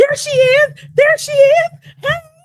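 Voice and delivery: shrieking, very high-pitched, very loud screaming. Retelling a friend's greeting on coming out, imitating a friend screaming. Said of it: "she's screaming".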